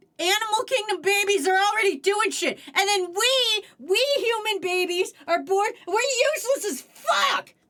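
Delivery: full-on loud, high-pitched shouting. Complaining that human babies are born helpless compared to baby bats: yelling loudly. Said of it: "Didn't mean to yell that loud".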